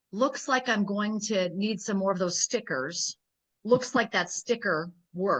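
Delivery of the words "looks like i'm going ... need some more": usual speaking voice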